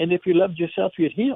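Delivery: ordinary talk, nothing marked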